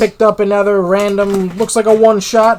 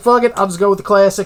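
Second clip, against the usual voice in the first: usual speaking voice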